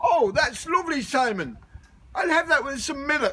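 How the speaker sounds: high-pitched, lilting Cork accent.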